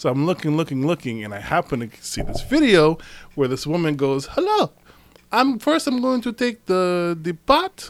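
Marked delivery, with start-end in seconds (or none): 4.3-7.9 put-on woman's broken English accent, much slower. Recounting a cooking video, the speaker imitates the woman in it with a broken English accent. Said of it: "it's very broken accent".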